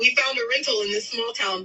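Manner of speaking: ordinary talk, nothing marked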